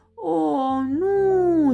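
crying out in horror. The farmer cries out as the hopping package nears her tractor; horrified cry. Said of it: "strigă fermiera îngrozită".

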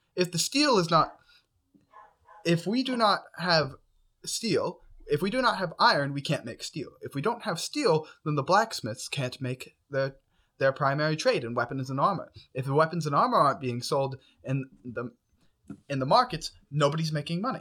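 stressed, harried, under-pressure delivery. A roleplay character talking to the players, stressed.

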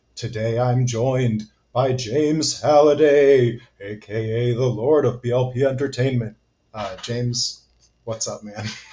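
put-on eerie ghost voice. Podcast host introducing his guest, turning into a ghost voice. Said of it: "you turned into a ghost near the end".

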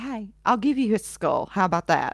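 ordinary talk

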